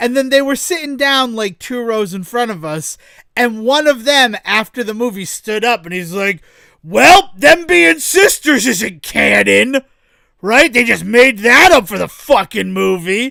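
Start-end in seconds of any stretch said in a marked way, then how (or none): 6.8-13.3 imitated loud talking, louder. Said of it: "Maybe lower your voice".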